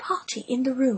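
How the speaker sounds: plain reading voice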